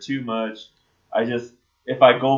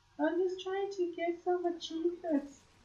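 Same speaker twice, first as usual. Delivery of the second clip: put-on very high-pitched, soft voice of a ten-year-old; 13 dB quieter than usual. Retelling what a kid player said during a game, in a young kid voice. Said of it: "It sounds like a ten year old".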